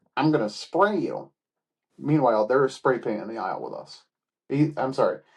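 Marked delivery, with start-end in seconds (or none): 0.2-1.3 cartoonish high-pitched voice. Imitating a man in a store aisle, in a cartoonish high-pitched voice. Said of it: "in a somewhat cartoon, high pitched type voice ... I'm going to do my best impression of him".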